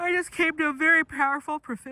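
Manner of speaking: talking through a yawn. Talking to the camera from a lounge chair during a nap: yawning while talking. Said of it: "so that's why I'm yawning".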